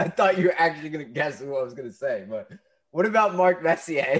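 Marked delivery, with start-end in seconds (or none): 2.3-4.2 loud, high, dripping with sarcasm. Suggesting a coach candidate he doesn't really want: sarcastic. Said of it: "let me say this sarcastically".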